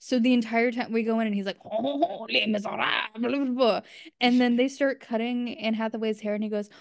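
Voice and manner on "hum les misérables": over-the-top, exaggerated fake French accent. Retelling how dad faked speaking french at the movie, in an exaggerated french accent. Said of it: "in an exaggerated French accent".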